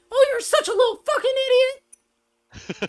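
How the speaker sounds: really angry, very high, loud, squeaky sing-song cooing.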